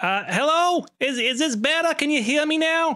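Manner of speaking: very high woman's voice, sounding over an intercom. Voicing a woman who speaks over a fumbled intercom: woman on the intercom. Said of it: "woman on the other side of the mic".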